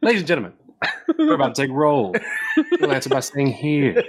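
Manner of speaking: showy, animated, sing-song teacher voice. Retelling how a substitute teacher took roll: imitating the substitute teacher. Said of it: "He'd be like".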